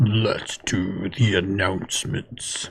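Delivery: deep, hushed, low, quiet demon voice. Host moving the show on to announcements, in a demon voice. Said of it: "Was was that like your demon voice?".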